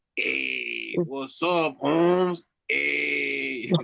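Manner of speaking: very slow, creaky, swooping street slang delivery.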